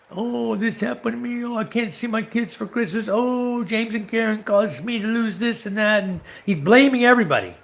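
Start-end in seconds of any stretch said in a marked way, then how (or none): 0.2-6.1 put-on blubbering, baby-like, whiny voice, pitched up. Retelling how the guy came begging for help: imitating whiny begging. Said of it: "crying like a baby, begging".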